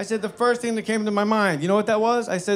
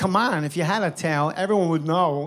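ordinary delivery

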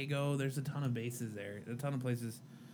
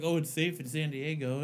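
ordinary delivery

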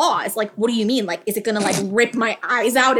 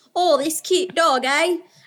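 put-on Australian accent with raised pitch; 6 semitones higher than usual. Retelling an ex-boyfriend's words about the dog: imitating an australian accent. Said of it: "He was actually Australian, so he was more like".

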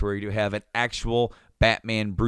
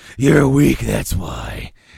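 very loud, rough, gruff alternate voice; 9 dB louder than usual. Describing a scene for Harvey, the speaker voices the other side: gruff alternate voice. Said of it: "the kind of gruff alternate voice".

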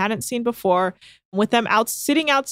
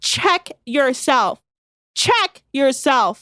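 mock freak-out, slow and drawn-out outburst; 3 semitones higher than usual. Retelling how Laura shouted at Kate: imitating Laura saying it loudly. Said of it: "for just saying, "Check yourself," loudly".

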